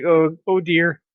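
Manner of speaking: put-on fretful French accent. Retelling a nervous Frenchman's words from a story, retelling nervous man, French accent. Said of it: "because he's French".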